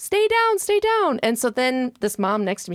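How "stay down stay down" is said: mock very high-pitched screaming. Retelling the coach screaming at the player: imitating the coach screaming. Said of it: "And he's screaming".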